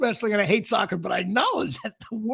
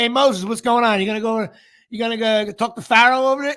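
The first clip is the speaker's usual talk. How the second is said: put-on casual, unpretentious everyday New Jersey accent; 6 dB louder than usual. Imitating the voices in a moses show: new jersey accent. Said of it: "This sounds like you're in Edison".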